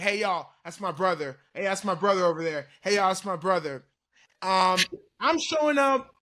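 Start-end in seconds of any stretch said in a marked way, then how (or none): 0.0-3.8 put-on attention-seeking voice. Picturing a brother at the draft, imitating Crawford hogging attention. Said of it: "he'd be the one trying to hog the attention".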